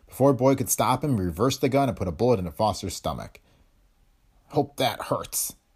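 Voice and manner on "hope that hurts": muttered half under the breath. Narrator reading a man who has just shot Foster, muttered. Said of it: "he muttered".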